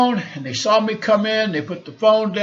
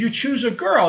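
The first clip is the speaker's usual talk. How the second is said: non-native broken English, simple phrasing. Retelling what the lady who owns the place said: imitating broken English. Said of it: "in her broken English".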